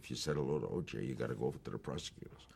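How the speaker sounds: soft, hushed stage whisper. Retelling what the producer said in the courtroom: imitating a half-whisper. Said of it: "the producer whispers".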